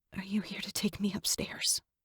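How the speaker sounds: trembling, wavering, very soft whisper. Reading a story, asking a stranger if he brings death: wavering whisper. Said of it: "I whisper, my voice wavering".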